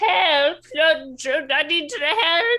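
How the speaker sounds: high, loud yelling cry for help. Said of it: "and also yell out".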